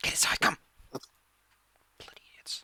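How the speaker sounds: slow, quiet whispered grumbling.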